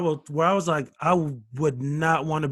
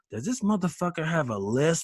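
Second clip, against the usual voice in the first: hushed, half-whispered stage whisper aside. Retelling what an audience member said to her friend: imitating someone half-whispering. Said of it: "she's whispering".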